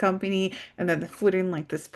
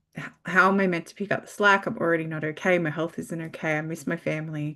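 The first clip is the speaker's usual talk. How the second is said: normal talking voice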